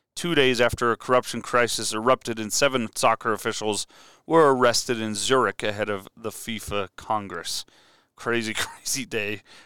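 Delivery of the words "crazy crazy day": sarcastic, quieter and slower. A host recounting dates in history comments on the FIFA news: sarcastic. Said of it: "Hopefully you heard my sarcasm coming through there".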